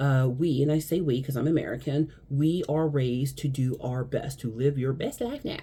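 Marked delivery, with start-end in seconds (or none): 4.4-5.6 heavy, dripping sarcasm laid on thick. Describing how Americans are raised, with heavy sarcasm. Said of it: "Heavy sarcasm".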